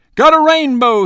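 shrill, excited yelp at full voice, very high. A narrator reads a boy rushing into the campsite, answering the narrator: yelping. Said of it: "he yelped".

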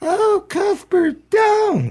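put-on, very high, girlish protesting squeal. Retelling a man mocking the atheists whenever they spoke: high-pitched put-on voice. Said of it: "he said in a high-pitched voice".

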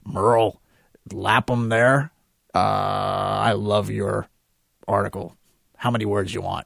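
raspy, gravelly voice with stretched-out "I". Retelling a phone call he got praising his article, Lewis Lapham smoker's voice. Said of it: "he sounds like he's been smoking for 700 years".

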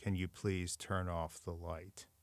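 very quiet, hushed, flat, expressionless monotone drone. Retelling what a man standing in a swampy area asked, in a monotone voice. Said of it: "in this monotone voice".

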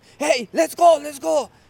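re-enacted yell. Describing when the chain is stopped and they come: retelling a yell. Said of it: "I'm yelling".

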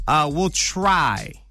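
heavy emphasis landing on try. Closing an unplanned show, promising regular programming: strong stress on try. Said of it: "I put the emphasis on the word try".

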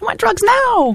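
very high, whiny spoiled-brat voice. Explaining how to give your inner voice a funny voice, Veruca Salt voice. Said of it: "Mine's Veruca Salt from Charlie and the Chocolate Factory. She's like".

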